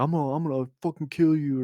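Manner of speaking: put-on stammering, furious screaming voice. Retelling a threat shouted at an Uber driver: imitating someone screaming. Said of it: "screaming at the guy to stop".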